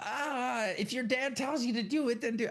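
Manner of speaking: very high, shrill, shouted-aloud screaming. Questioning a line a woman screams in a show; mock screaming out loud. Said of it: "somebody would scream out loud".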